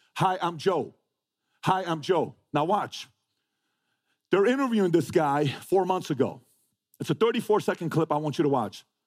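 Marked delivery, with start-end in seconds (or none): 0.1-2.3 very slow delivery, every word drawn out. Retelling a player greeting opponents at the Super Bowl: imitating Joe. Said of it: "Who talks like this?".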